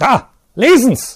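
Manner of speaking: very high, very loud, shrill furious scream. A man throws a crumpled paper at the teacher: screaming in anger. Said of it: "schrie Sepp im Zorn".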